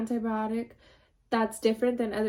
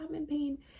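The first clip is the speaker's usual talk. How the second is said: barely audible, faint half-whisper, pitched high; 4 semitones higher, 7 dB quieter than usual. Retelling how she told the nurse after surgery: imitating her own half-whisper. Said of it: "I was whispering".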